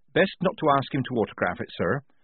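ordinary delivery

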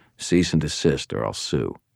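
ordinary delivery

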